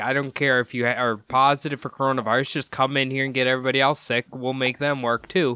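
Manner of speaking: plain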